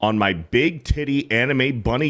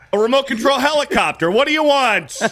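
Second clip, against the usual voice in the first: put-on pushy kiosk salesman voice, higher; 13 semitones higher, 4 dB louder than usual. Acting out a mall kiosk seller pushing products: imitating a pushy mall kiosk seller. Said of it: "He's like".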